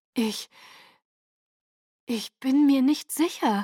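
puzzled, uncertain, sounding at a loss. Questioned about a child, a woman answers, sounding at a loss. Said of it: "Es klang ratlos".

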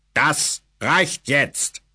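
firm, stern, commanding tone allowing no argument. A narrator reads a man's order to an excited crowd, thunderous voice. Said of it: "befahl er nach einer Weile mit einer Donnerstimme".

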